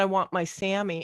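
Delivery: ordinary delivery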